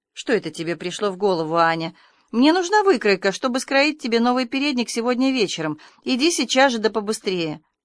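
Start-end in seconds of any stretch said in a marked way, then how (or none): none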